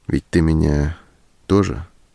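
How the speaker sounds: ordinary delivery, nothing marked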